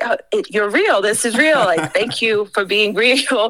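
mock, half-shouted, mild yell of disbelief. Retelling a hiker who saw the trombone: imitating someone yelling. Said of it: "immediately starts, like, yelling at me".

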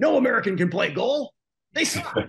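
bad put-on German accent. Retelling what his dad said about a soccer movie, horrible impression of his dad. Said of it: "Horrible impression of my dad".

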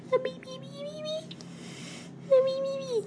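very high, soft, squeaky puppet voice. Speaker tries out an impression, then asks if it sounds right: Beaker impression. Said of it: "Do I sound like Beaker?".

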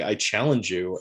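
plain

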